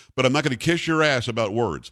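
ordinary talk, nothing marked

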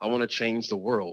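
usual speaking voice

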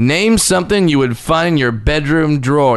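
ordinary delivery

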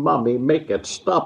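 put-on screaming. Retelling being poisoned and curled up in a ball: imitating own past screaming.

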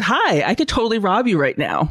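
mock cheeriest, sunniest voice, sing-song swoops. Recounting walking up to people counting money: retelling in cheeriest voice. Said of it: "in my cheeriest voice".

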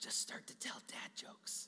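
breathy whisper, like a little voice. Retelling the little voice on your shoulder: imitating a whispering voice. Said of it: "starts to whisper in your ear".

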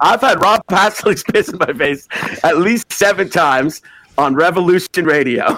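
words broken by laughter. Asked to record a shout-out for Revolution Radio, laughing while talking. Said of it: "Now say it without laughing".

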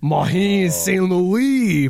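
weird, terrible put-on French accent. Showing how one might say the name: weird, terrible French accent. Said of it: "a weird, terrible French accent".

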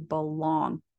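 belong stressed with a falling tune.

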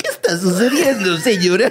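attempted dinosaur character voice. Asked by a co-host to do the voice, trying it out, in a Barney voice. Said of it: "tienes que hacer tú la voz de Barney".

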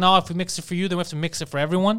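ordinary talk, nothing marked

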